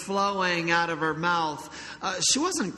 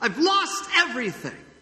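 high, screamed cry at the top of the lungs; 6 semitones higher than usual. Retelling the man finding his crushed car: screaming. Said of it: "and then screamed".

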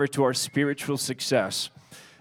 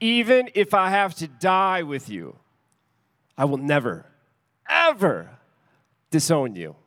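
grand, theatrical, swooping heroic delivery; 3 semitones higher than usual. Retelling what a character says in that moment, in a mock-dramatic Braveheart way. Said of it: "most dramatic, like, Braveheart kind of way".

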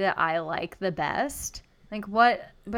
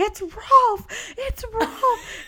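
shrill, loud, excited cry dragged out very slow; 4 dB louder than usual. Retelling how a bridesmaid's mom reacted at a wedding: imitating someone freaking out. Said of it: "freaking out".

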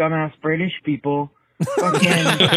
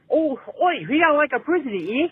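put-on British accent slipping Australian, very high; 9 semitones higher than usual. Mocking how people in Britain talk: imitating a British accent. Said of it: "I sound more Australian than anything else".

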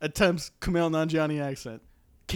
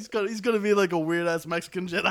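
plain

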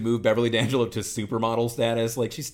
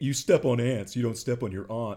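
mocking, put-on smug tone. Podcaster mimics northeasterners correcting how aunt is said, mocking a smug correction. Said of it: "where they smugly say".

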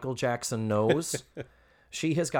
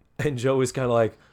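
ordinary talk, nothing marked

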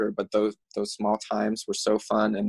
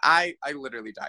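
normal talking voice

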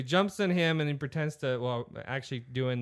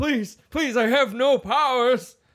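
put-on shrill, very high, loud, pleading old man voice; 11 semitones higher, 10 dB louder than usual. Mocking a beaten villain who now seems an old man: imitating a pleading old man. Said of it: "just an old man".

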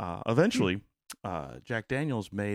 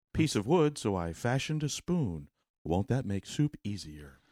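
put-on soothing, calming voice. Imitating a PBS wilderness filmer describing his day: soothing Dick Proenneke voice. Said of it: "almost Bob Ross soothing voice".

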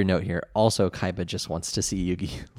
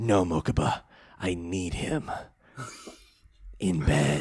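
vaguely sexy put-on voice, quieter; 2 semitones lower, 5 dB quieter than usual. Showing how a Kaiba impression comes out: vaguely sexy Kaiba impression. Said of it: "I can't do the Kaiba impression without it being vaguely sexy".

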